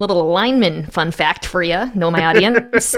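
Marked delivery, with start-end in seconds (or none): 0.0-1.9 Wisconsin regional accent. A football commentator talking to his audience, in a Wisconsin accent. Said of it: "I did a Wisconsin accent there".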